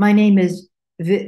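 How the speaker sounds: stuttering with restarts. A speaker demonstrates a second way of saying their name: stuttering with restarts. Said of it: "learn to start over so that you wouldn't show any struggle".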